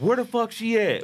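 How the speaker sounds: loud mock shout. Retelling a date interrupted by a voice at the restaurant: imitating a loud voice. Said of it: "I hear a loud voice".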